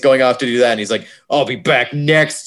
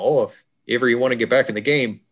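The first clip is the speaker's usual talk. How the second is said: put-on Minnesota accent; 4 dB quieter than usual. Quoting a line from the story being discussed, in a minnesota accent. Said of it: "That's my Minnesota accent".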